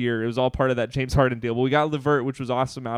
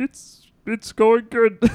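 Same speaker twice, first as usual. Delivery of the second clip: put-on frog puppet voice; 10 semitones higher, 6 dB louder than usual. Podcast host answering his own greeting as Kermit the Frog, Kermit the Frog voice. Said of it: "You do a good Kermit".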